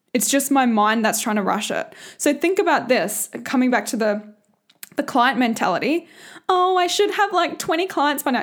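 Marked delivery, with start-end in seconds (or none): 6.5-8.5 deliberately annoying put-on voice, high-pitched. Speaker voicing the ego's client mentality, in an annoying voice. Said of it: "I just go into that annoying voice".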